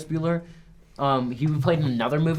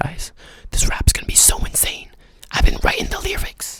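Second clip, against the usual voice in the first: hushed, confiding whisper; 4 dB louder than usual. Talking straight to the audience, asking them to follow: whispering. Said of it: "Why are we whispering?".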